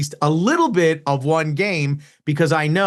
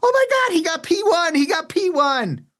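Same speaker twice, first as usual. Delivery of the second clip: mock shrill, very high, thrilled, excited shriek; 13 semitones higher than usual. Imitating a race fan screaming over a driver's result: imitating excited screaming. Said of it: "will start screaming".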